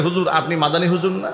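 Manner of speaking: ordinary talk, nothing marked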